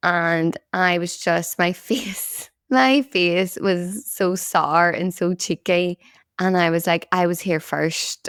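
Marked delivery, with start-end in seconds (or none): none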